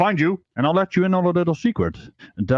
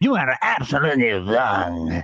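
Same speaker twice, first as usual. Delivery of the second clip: slow, slurred words with simmering anger. Channeling a woman's energy to try out her line, with mock-angry, slurred speech. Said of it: "a specific kind of slurry speech... you can feel the anger in there... Let me just channel her energy".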